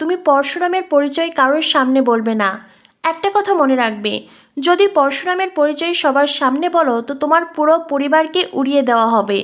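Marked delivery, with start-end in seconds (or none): none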